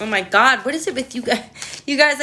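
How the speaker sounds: talking through laughter. Talking to you guys, unable to keep a straight face: laughing while talking. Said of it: "I can't even stop laughing".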